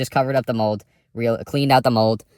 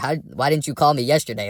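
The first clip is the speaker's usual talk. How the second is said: raised, higher-pitched voice; 4 semitones higher than usual. Retelling questioning a tenant about a cold house: imitating his own raised voice. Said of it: "I had raised my voice".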